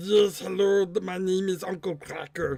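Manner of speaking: Russian-accented voice. Showing a voice for a drawn character: voice like Gurgi in Soviet Russia. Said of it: "this kind of voice".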